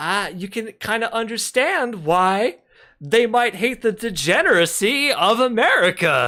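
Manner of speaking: fake earnest sarcasm. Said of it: "That was sarcasm, by the way".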